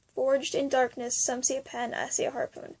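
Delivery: ordinary talk, nothing marked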